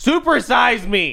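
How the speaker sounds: hollered, half-joking, high-pitched yell. Making a crude joke about himself, mock yelling. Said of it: "Just yelling at my cock".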